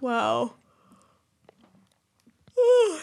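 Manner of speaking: words swallowed by a yawn mid-word. Yawning again partway through the conversation, yawning. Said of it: "sorry, I'm yawning again".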